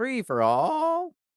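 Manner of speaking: voice cracking, breaking mid-phrase. Podcast host introducing the final segment of the show, voice cracking. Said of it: "My voice cracks".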